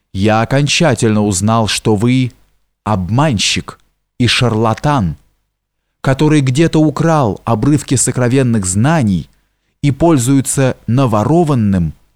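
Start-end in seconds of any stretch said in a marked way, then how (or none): none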